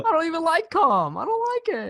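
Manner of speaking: very high, loud, animated sing-song, pitch swooping around. Retelling a TikTok bit: Jerry Seinfeld impression. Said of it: "my impression of Jerry Seinfeld".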